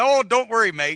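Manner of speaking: put-on Australian accent. Retelling a story, quoting a rider's reply to a warning, Australian accent. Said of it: "Cue the Australian accent".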